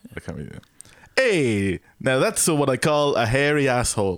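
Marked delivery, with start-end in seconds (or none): 1.2-4.2 high, slow, put-on Italian accent. Podcast host delivering this week's catchphrase as an italian guy, in an italian guy voice. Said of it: "It's an Italian guy".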